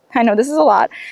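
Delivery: very fast, rattled-off, terrified, nervous talk. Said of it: "I'm talking really fast because I'm also terrified".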